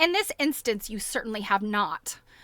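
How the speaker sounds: ordinary delivery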